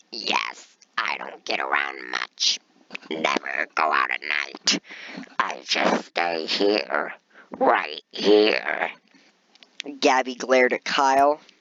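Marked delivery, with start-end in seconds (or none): 0.1-8.9 very low, slow, drawn-out, smoky smoker voice. Narrator reading Gabby's reply to Kyle, in Gabby's smoker voice. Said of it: "my throat is not ready for my smoker voice".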